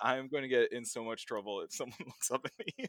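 laughter held back.

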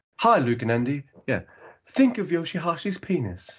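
mock soft-spoken British accent. Imitating Ian reading a script for word paintings: Ian's soft-spoken British accent. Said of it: "that really kind of soft-spoken British accent".

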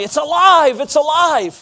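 slow, theatrical, dramatic shout. Retelling a man shouting to people going by: imitating someone shouting. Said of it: "he started shouting to people".

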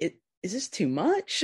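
ordinary talk, nothing marked

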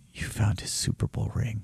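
breathy, hushed half-whisper on a sigh. Retelling a woman's reply to the speaker, retelling her sigh. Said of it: "And she sighs".

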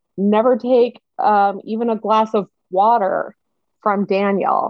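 ordinary talk

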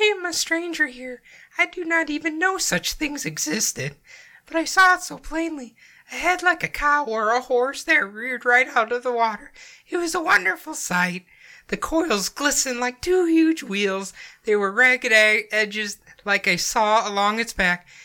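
very high voice, cracking throughout. Reading a witness's report aloud in her voice: imitating Miss Campbell, cracking voice. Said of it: "you sound like a, uh, teenage boy going through puberty".

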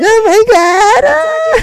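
mock crying like a little girl. Retelling crying after a fifth-grade fight: imitating own past crying. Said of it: "I was crying like a little girl".

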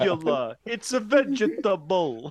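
very slow, high-pitched, drawn-out put-on Italian accent. Joking how the actor will sound: Steve Martin in My Blue Heaven. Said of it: "sound like Steve Martin in My Blue Heaven".

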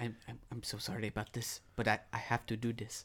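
close, soft, hushed whisper. Playing a character who whispers an apology into a hooded figure's ear: whispering. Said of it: "I'm gonna whisper in his ear".

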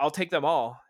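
acted, loud, smug, snarky delivery. Retelling a film scene where a man answers a gun dealer, retelling a snarky line. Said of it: "says in like a snarky tone".

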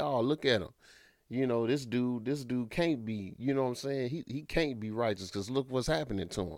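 ordinary talk, nothing marked

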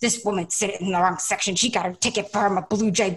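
mock-angry, pissed-off sounding delivery. Retelling what a dad at a baseball game said about her, mock-angry. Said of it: "the dad gets pissed".

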